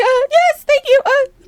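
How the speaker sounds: stunned, squeaky-high voice. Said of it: "my voice went up really".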